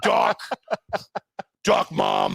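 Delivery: very low, rough, creaky angry growl. Retelling a game of duck, duck, goose, imitating an angry little guy. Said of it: "he's an angry little".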